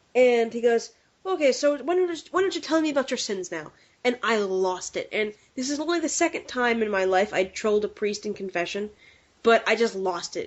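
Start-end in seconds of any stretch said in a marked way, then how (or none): 1.2-3.7 very thick, heavy, broad Irish brogue. Act out the priest speaking to you in confession, in a very thick Irish accent. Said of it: "he had a very thick Irish accent".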